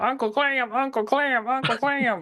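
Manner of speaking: put-on high-pitched accent, stretched slow and drawled. Explaining what an accent reminded them of: Home on the Range accent. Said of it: "that accent".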